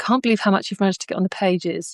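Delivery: normal talking voice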